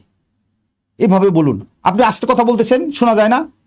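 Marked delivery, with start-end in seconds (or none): 1.8-3.5 high-pitched, rude complaining tone. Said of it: "এরকমভাবে কোনোভাবেই নয়".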